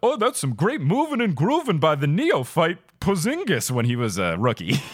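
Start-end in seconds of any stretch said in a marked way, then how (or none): 0.0-3.7 energetic play-by-play call like a TV commentator. Showing how a basketball announcer describes a play: Clyde Frazier impression. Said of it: "Is that your Clyde Frazier impression?".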